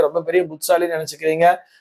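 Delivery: ordinary talk, nothing marked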